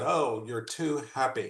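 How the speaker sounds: play-acted scornful, dismissive tone full of disdain. Retelling what a friend from the center said: imitating Lucy's disdain. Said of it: "the way she said it, like, with disdain".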